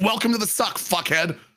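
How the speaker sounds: put-on harsh, unfriendly voice. Retelling what soldiers said on day one: imitating unfriendly infantry soldiers. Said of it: "They said it in an infantry way".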